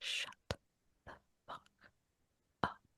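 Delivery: hushed, whispered mutter under the breath. Retelling what another girl in the office said: imitating muttering under breath. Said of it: "heard her say under her breath".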